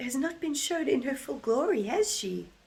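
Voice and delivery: high, loud voice used for talking to a dog. Talking to her pet dog in a dog voice. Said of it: "the dog voice must be so annoying".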